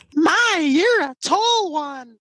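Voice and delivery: deliberately irritating, obnoxious, annoying silly voice. Taking up a challenge, speaker shows off an obnoxious annoying voice. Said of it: "I can do one that's more obnoxious sounding".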